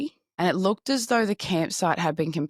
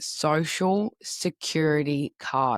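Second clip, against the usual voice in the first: slow, careful, deliberate word-by-word enunciation. Repeating a phrase after stumbling over it: said slowly. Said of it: "I just have to say it slowly".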